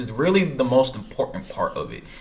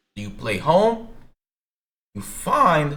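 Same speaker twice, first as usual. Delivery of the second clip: voice cracking and pitching up on the words; 5 semitones higher than usual. Streamer explaining a game mode to viewers, with a cracked voice. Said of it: "Sorry, my voice is cracked".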